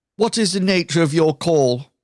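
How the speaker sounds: very businesslike, switchboard-style phone voice. Voicing a character answering a phone call: very businesslike tone. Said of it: "puts on a very, um, businesslike tone".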